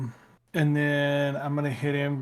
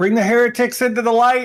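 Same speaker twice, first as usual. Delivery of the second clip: fervent, zealous, loud and high-pitched yell; 9 semitones higher, 8 dB louder than usual. A player voices Otis yelling something to the group. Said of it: "you would hear Otis yell".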